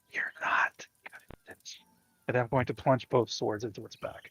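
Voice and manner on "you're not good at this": whispering in character, quieter. Whispering into a vampire spawn's ear before stabbing it: whispering in character. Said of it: "We missed the whisper".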